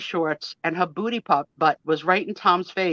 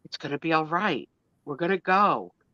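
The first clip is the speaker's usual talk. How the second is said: put-on, mock-soothing delivery. Speaker reenacting calming a man they've known twenty-seven years, retelling soothing words.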